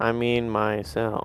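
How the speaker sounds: utterly dejected voice. In a back-and-forth over who read it, the speaker answers in a most downtrodden voice. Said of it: "Nova says that in like the most downtrodden voice".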